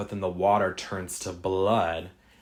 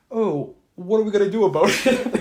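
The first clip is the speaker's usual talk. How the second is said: put-on Canadian accent, very high, raised; 11 semitones higher, 6 dB louder than usual. Retelling a movie scene's lines: imitating a canadian accent. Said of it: "their Canadian accents are jumping out".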